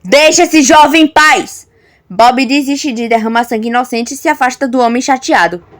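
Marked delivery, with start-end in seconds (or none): 0.1-1.6 firm, stern, no-nonsense commanding tone. Narrator reading one character's order to another, in a firm commanding tone. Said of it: "Marcos ordena em tom firme".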